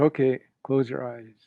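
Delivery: ordinary delivery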